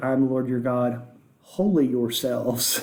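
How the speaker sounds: ordinary delivery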